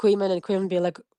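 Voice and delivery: plain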